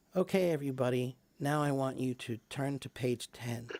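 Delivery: feeble, listless, soft, low-energy voice. Showing how teaching sounds without speaking loudly: weak, quiet delivery. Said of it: "it sounds weak".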